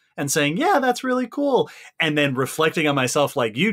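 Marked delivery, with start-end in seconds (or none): 0.6-1.7 very high-pitched, bright, eager, acted enthusiastic excitement. Recalling how they answer when asked to repeat themselves, retelling an enthusiastic reply. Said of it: "summoning the exact same genuine enthusiastic sound".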